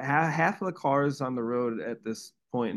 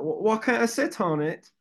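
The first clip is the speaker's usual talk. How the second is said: put-on Australian accent, much higher and slower; 10 semitones higher than usual. Retelling what a woman asked after sitting on the speaker's amp, imitating an Australian accent. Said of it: "That was a good accent".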